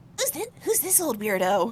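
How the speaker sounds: hushed, quiet little stage half-whisper aside. Retelling how Colette tilts her head at a stranger, retelling Colette's half-whisper. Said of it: "she kind of whispers a little bit".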